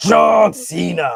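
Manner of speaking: weak, rough-edged, raspy promo voice, not quite right. Trying a wrestling promo about John Cena: weak Vince McMahon impression. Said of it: "I do a better Vince".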